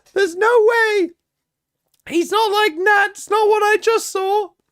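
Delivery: very high, gushing, overexcited caster commentary voice. React to the game while doing a Young Shio impression. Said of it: "I'm gonna do Young Shio".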